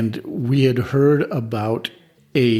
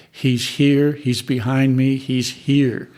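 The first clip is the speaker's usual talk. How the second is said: ordinary talk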